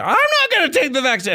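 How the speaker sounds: very high-pitched, loud, dramatic ranting outburst. Describing how dramatic a man gets, imitating a high-pitched loud voice. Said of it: "gets all high pitched and loud".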